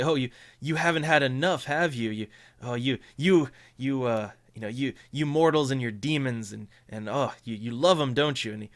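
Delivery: laughing while speaking. Voicing Victor, who sits back and answers a manipulation roll: Victor laughing while speaking. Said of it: "sit back and laugh and say".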